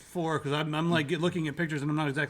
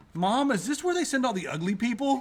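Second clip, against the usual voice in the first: loud, high-pitched, unfiltered blurting; 8 semitones higher, 3 dB louder than usual. Recounting a childhood remark to their mother at a restaurant, retelling a loud child's remark. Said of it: "very loudly said".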